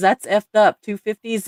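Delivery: ordinary delivery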